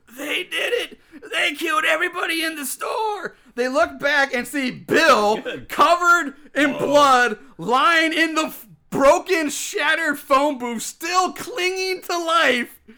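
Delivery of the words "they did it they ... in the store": put-on strained, gasping voice, higher pitch. Retelling a film scene where a wounded man accuses others: strained gaspy voice. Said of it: "the strained and gaspy voice".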